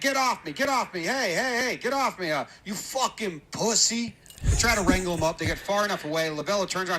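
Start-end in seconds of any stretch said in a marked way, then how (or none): 0.0-4.2 mild, pitched-up half-shouting yell. Retelling how a thrown-out man shouted at those dragging him off, retelling a yell. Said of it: "I'm still yelling here".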